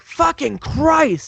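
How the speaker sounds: screamed, high. Retelling finding the watch cheaper online: imitating his own scream. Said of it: "Screaming at the".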